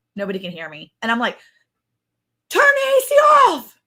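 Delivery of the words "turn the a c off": acted-out yell, higher, louder, slower. Retelling calling out for one of the kids, retelling a yell to the kids. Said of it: "I'm like yelling for one of my kids".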